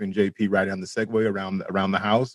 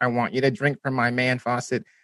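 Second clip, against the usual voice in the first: put-on robot voice, higher pitch; 3 semitones higher than usual. Quoting a line JP says in something the speaker recently rewatched: JP's robot voice. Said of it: "a line that JP says in a robot voice".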